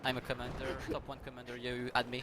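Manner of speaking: ordinary talk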